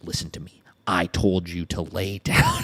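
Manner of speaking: low, very slow, stern, serious dad voice. Retelling a dad talking to his dog up close: imitating serious dad talk. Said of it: "you gotta have the serious dad talk".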